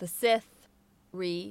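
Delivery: slow, deliberate, drawn out, each word weighed. Joking that an episode title has to be said aloud: said slowly. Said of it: "you have to say it slowly".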